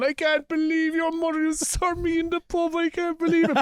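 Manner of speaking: very high, blubbering, sobbing wail. Retelling how a man from the pub reacted on meeting them: imitating someone bawling.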